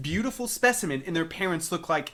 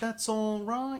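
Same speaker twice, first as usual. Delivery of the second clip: put-on British accent with pitch raised; 5 semitones higher, 5 dB quieter than usual. Retelling own earlier line said in a put-on British accent. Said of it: "you said something in a mock British accent".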